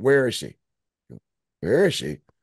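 harsh, demanding voice. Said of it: "kinda harsh like that".

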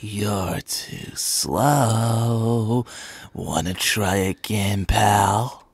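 sinister, quietly menacing, slow drawn-out half-whisper. Explaining how to voice the character, the speaker demonstrates a sinister half-whispered Sonic.EXE voice. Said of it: "I just do like a Sonic with like a whisper and a little more sinister".

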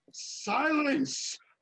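high, assured commanding tone. A player's character orders a foe to stop moving, in a confident raised voice. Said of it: "raising my voice with confidence".

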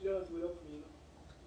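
gentle, hushed voice.

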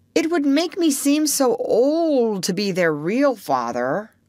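high, drawn out, sorry, apologetic excusing tone. Peter continues speaking to Wendy, apologetic. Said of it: "he continued apologetically".

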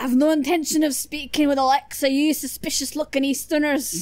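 put-on Scottish accent. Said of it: "I can do a Scottish accent".

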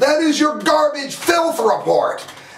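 very high-pitched, furious outburst. Denouncing someone's show at the end of a rant: furious. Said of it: "I am furious".

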